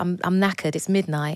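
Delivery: ordinary delivery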